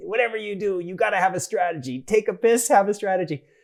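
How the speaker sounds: put-on leaning into Brooklyn accent. Quote what your mentor and great friend always used to say, in Les Gelb's Brooklyn accent. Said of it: "and he had a Brooklyn accent".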